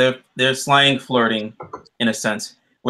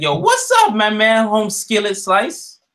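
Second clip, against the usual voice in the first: cringey try-hard slang, very high and swooping; 10 semitones higher, 3 dB louder than usual. Retelling how characters talked in a show: imitating cringy slang talk. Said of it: "slang talk".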